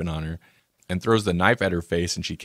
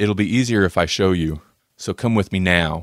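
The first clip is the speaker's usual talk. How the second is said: sinister, very creepy, commanding delivery. Retelling a character's line in a movie: imitating a creepy delivery. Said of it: "he delivers it in a very creepy manner".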